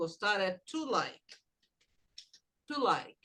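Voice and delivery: TO in "to like" stressed, low and soft.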